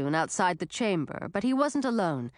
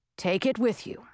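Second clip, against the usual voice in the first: ordinary delivery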